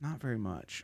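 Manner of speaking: beaten, deflated, dejected tone. Answering how much weight was lost since training: defeated. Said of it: "You sound so defeated".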